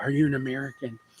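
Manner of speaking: tender, gentle, soft half-whisper. Retelling how a person leaned in and asked a question: imitating a gentle half-whisper. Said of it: "just so gently just leaned in and whispered".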